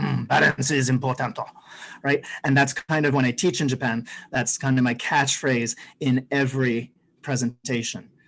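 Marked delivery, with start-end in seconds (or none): 0.0-1.4 put-on English spoken in a Japanese accent. Quoting a homestay mother in Japan: imitating a Japanese accent. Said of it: "my Japanese homestay mother used to say in her delightful accent".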